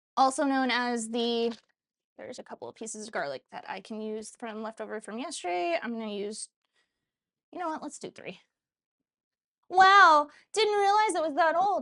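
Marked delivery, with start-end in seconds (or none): 9.7-11.8 high, loud, sarcastic, put-on surprised voice. Reacting to how old the pressure cooker is: sarcastic-sounding put-on voice. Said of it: "I don't know why I did it in a voice".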